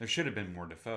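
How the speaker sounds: normal talking voice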